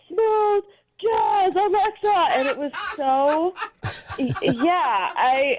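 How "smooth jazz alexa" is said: put-on shrill, very high, loud shouted yell. Retelling how he kept repeating a request to Alexa: imitating someone yelling. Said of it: "so he just kept yelling".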